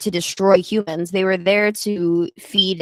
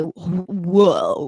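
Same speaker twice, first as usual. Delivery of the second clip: put-on stoned voice with amazement. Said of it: "smoke a lot of weed and say".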